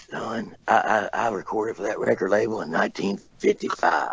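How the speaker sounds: soft, hushed, confiding whisper. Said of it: "he was whispering".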